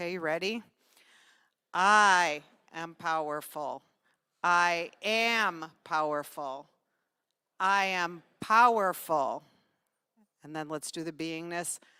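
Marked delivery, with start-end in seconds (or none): 1.7-2.4 emphasis on the word I. Leading listeners to say a sentence along with the speaker, with stress on i. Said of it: "the I in the first sentence is um, is highlighted".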